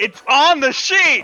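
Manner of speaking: very loud, high, shrill, drawn-out shout. Replying to another speaker's question during a game, yelling. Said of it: "Don't yell at me".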